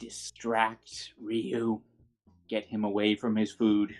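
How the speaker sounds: slow, soft, secretive half-whisper. Sending a secret message into a character's ear: half-whispering. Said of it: "just a whisper in Jezebel's ear".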